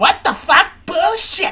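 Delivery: put-on very high-pitched English with Japanese accent. Act out the voice actress swearing in English, imitating a Japanese voice actress doing English. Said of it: "the Japanese voice actress, she's like doing English".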